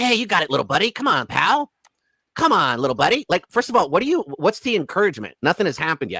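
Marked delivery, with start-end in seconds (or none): 0.0-3.3 hokey, cheesy bad-movie-dad encouraging tone. Mocking a mother's encouragement to her kid near bees: bad movie dad voice. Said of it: "a bad dad in a movie".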